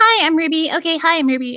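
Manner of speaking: super nasal, very high voice. Showing the catchphrase used to get into character: super nasal Ruby voice. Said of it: "super nasally Ruby is like".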